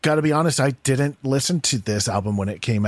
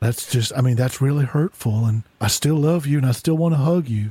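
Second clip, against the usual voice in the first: silly put-on bear character voice. Playing a bear character, answering the other person's remark, in a silly bear voice. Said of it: "this is [name] doing a voice".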